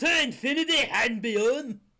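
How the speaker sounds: very loud, belted, thick Scottish accent. Answering someone picturing a Scottish Buzz Lightyear: Buzz Lightyear in thick Scottish accent. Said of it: "Buzz Lightyear with a thick Scottish accent".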